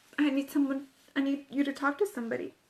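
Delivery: normal talking voice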